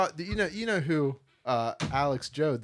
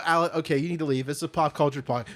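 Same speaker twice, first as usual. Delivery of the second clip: normal talking voice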